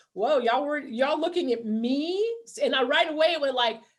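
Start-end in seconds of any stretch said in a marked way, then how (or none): 0.2-2.3 put-on chuckling, amused laughter through the words. Retelling own reaction to a couple shaking their heads: retelling own words while laughing. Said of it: "laughing like".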